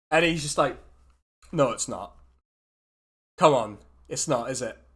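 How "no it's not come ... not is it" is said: bored, thoroughly unimpressed elf voice. Game master voicing an elf sitting across a desk from the player: unimpressed elf. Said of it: "an incredibly unimpressed elf".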